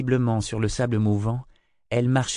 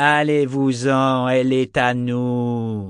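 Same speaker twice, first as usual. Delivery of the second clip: sibilant, vibrating, menacing hissing voice; 4 dB louder than usual. Narrator reading a novel gives the creature's line a hissing, menacing voice. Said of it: "La voix sifflante, vibrante, était lourde de menaces".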